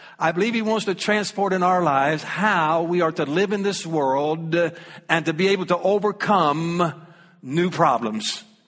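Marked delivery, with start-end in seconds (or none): 7.4-8.4 new problems stressed, low and slow. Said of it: "I'm gonna emphasize the word new problems".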